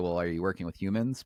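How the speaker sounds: put-on sarcastic voice. Retelling own usual reply to agents' worries: imitating own sarcastic reply. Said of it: "I always just sarcastically say".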